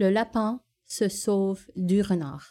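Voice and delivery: clumsy, butchered, bad European French accent. Contrasting the same French sentence: butchered France French accent. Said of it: "And in France, it would probably be like".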